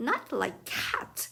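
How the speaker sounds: fierce, passionate, indignant impassioned outcry. The mouse, answering Alice's apology about cats: shrill, passionate mouse voice. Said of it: "cried the mouse in a shrill, passionate voice".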